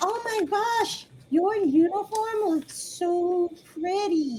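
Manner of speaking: high, squeaky, tiny cricket-like creature voice. Narrating a scene, voice a creature speaking from behind the listeners in a high-pitched voice. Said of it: "You hear a high pitched voice behind you that says".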